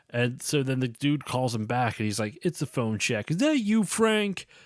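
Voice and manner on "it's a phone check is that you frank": put-on New York accent, higher pitch. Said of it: "Very kinda like, um".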